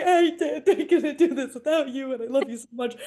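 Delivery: high, tearful voice sobbing through every word. Speaker re-enacts speaking to a woman holding their hands, retelling own sobbing. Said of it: "and I'm sobbing at her".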